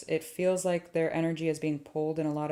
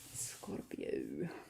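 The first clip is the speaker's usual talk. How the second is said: whispered, dramatic, spooky vampire voice; 12 dB quieter than usual. Speaker announces the sign Scorpio in a spooky Dracula-movie voice. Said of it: "Like I was an extra on a Dracula movie".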